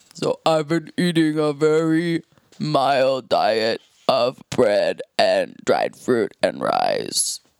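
very deep put-on voice. Explaining how they dealt with late-night tummy aches, in their deepest voice. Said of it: "in your deepest voice".

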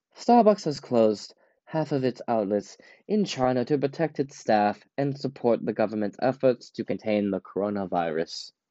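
put-on British accent, formal news-reading style. Reading a BBC article about Starbucks aloud: put-on British accent. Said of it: "I'll be doing this in a British accent".

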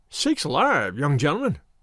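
startled, taken aback, caught off guard. Narrator reading a shepherd's reply to a young gentleman, startled. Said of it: "in a startled voice".

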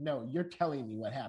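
put-on firm, insistent, demanding voice. Retelling how a mother pressed a child to explain: imitating a mother's firm way. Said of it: "in that mom way".

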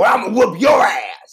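intense, very high, loud, shrill, menacing yell. Retelling a movie scene where she yells at a girl: imitating Molly Shannon yelling. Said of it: "she yells at this girl".

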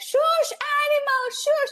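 screaming at a very high pitch. Retelling going into the bushes during a photo shoot: imitating own screaming. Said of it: "I start screaming".

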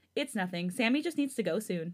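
ordinary talk

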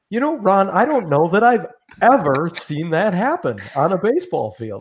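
high, truly surprised voice, lifted. Imitating Pat Hughes when something on the field surprises him: imitating surprised Pat Hughes voice. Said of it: "when he gets that surprised voice".

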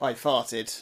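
ordinary delivery

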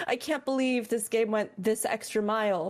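ordinary talk, nothing marked

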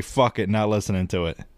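normal talking voice

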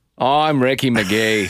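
put-on Australian accent.

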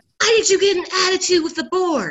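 acted, high, screaming, demanding voice. Recounting the boss coming in after the board meeting, imitating the boss screaming. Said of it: "he comes in and he's screaming".

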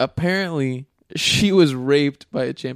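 talking through breaking laughter. A speaker recounts something heard on another podcast, laughing while speaking. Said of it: "I'm sorry that I'm laughing".

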